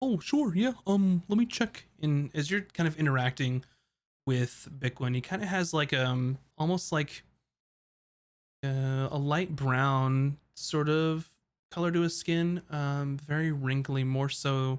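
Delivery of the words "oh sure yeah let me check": high-pitched turtle shopkeeper character voice. Voicing a large turtle behind a shop counter greeting customers: voicing a turtle shopkeeper. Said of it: "you see a large turtle".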